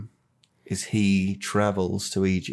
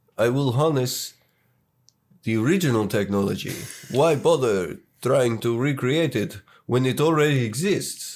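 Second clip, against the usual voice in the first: put-on speaking with Serbian accent; 4 semitones higher than usual. Retelling what a character says, the speaker does a put-on Serbian accent. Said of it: "can I do a Serbian accent?".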